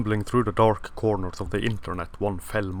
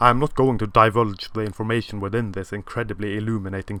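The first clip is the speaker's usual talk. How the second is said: ordinary talk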